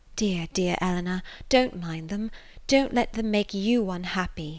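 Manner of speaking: low, hushed and eager voice. A young woman comforting her upset sister, in a low but eager voice. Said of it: "said in a low but eager voice".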